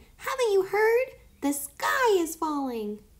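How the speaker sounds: crying out, very high. Narrating Kai, cornered under a rock, calling to Tio Antonio: cried out. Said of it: "cried Kai".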